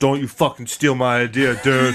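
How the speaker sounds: mock drunk man voice. Imitating a drunk guy at a bar warning the listener: imitating a drunk guy at a bar. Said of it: "there's a drunk guy who tells you".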